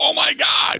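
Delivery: very high, anguished, shouted outcry.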